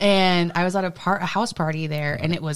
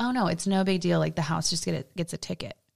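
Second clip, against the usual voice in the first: ordinary talk, nothing marked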